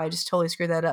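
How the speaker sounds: ordinary talk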